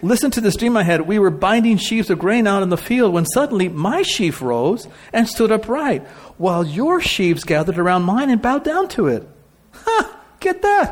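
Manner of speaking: put-on high, bratty, snotty little-kid voice. Retelling a story, voicing a boy telling older men his dream, snotty little kid voice. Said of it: "just picture this little snotty kid".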